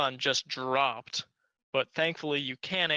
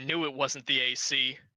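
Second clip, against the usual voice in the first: slow, rough, gruff voice. Narrating the scene, the speaker voices someone outside the vent in a gruff voice. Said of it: "you hear a gruff voice from outside the vent saying".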